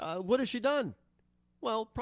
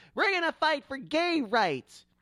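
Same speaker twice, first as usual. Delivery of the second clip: snide, shrill, high, sneering voice; 7 semitones higher than usual. Speaker mocks a woman's promises, answering each with a retort: mocking shrill voice imitation. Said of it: "with her shrill voice and say".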